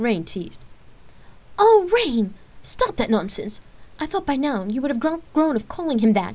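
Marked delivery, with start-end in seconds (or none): 1.6-6.4 sharp, exclaiming delivery. A mother cuts in on her children's teasing banter: exclaiming. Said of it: "her mother exclaimed".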